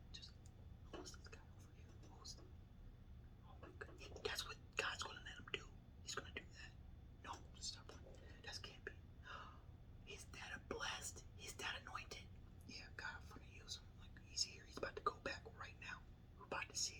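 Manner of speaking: very soft, breathy whisper throughout. Retelling what people around said about the speaker: imitating people whispering. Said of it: "I don't know if you can hear me whispering".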